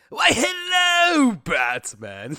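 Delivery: very high, shrill, booming villain voice, "hello" stretched. Retelling greeting Batman in a Mark Hamill Joker impression. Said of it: "I do a very good Mark Hamill Joker impression".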